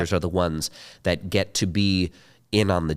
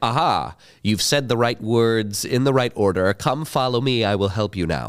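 stiff, humorless voice, higher pitch; 3 semitones higher than usual. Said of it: "he's very, very stiff".

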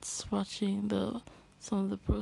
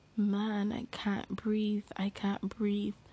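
plain

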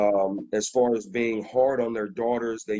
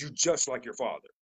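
mock cross, angry, accusing tone; 2 semitones higher, 6 dB quieter than usual. Imitating an upset mother scolding her child: imitating an angry tone. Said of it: "in an angrily tone".

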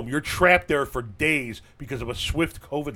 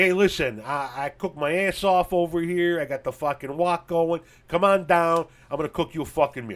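put-on Chicago accent, gone all the way; 4 semitones higher than usual. Imagining a man inviting a woman over to cook her a meal, in a full Chicago accent. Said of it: "I went total Chicago accent on you there".

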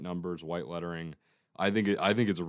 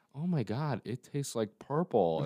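put-on high, slow, childlike five-year-old voice; 6 semitones higher than usual. Retelling a commercial where a woman eats lipstick: imitating a five-year-old's voice. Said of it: "she says it like a five-year-old".

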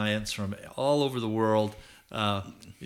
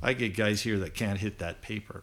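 mock deadpan, flat and expressionless delivery. Recounting shooting practice, the speaker quotes the man's reply: retelling a deadpan remark. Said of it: "just deadpan".

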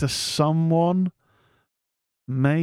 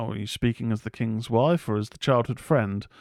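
plain

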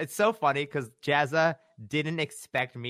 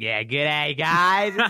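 put-on louder broad Australian accent; 2 semitones higher, 7 dB louder than usual. Retelling how an Australian walked into an art meetup, broad Ocker Australian accent. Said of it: "with like the Oka accent".

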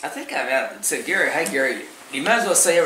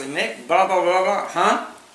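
mocking "huh", higher pitch; 6 semitones higher than usual. Retelling how a golf partner is copied right after speaking: imitating a friend saying huh. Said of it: "right after him, I say".

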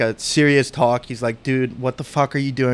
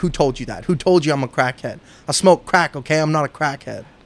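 mock upset, angry outburst; 2 semitones higher than usual. Imitating someone who gets mad at being called a crackhead: imitating an upset person. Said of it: "They get very upset".

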